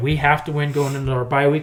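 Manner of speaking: ordinary talk, nothing marked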